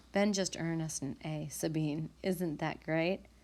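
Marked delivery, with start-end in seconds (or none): none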